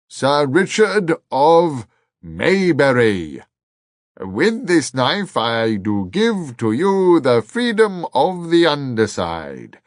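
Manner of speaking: booming, loud, grand bellow. Narrator voicing the Earl knighting Richard with a knife, bellowing. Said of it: "he bellowed".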